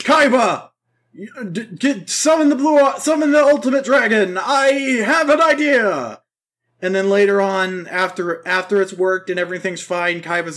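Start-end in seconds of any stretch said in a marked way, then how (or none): 0.0-6.2 high-pitched stammering voice. Retelling a duel scene, calling out to Kaiba: imitating Yugi. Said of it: "And Yugi's all like".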